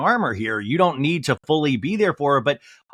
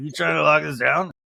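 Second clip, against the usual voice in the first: put-on half-yawning voice. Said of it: "it's like almost like half yawn".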